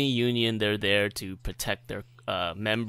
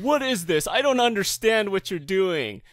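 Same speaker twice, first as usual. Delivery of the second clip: put-on, shrill, very high-pitched yelling; 10 semitones higher, 4 dB louder than usual. Retelling a phone call where the caller yelled: imitating someone yelling. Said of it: "he starts, like, yelling at me".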